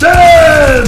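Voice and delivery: high-pitched, loud, excited yell.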